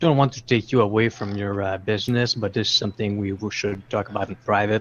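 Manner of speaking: hushed secretive tone. Playing a character who leans in to talk, in a lowered conspiratorial voice. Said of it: "I lower my voice and I lean in".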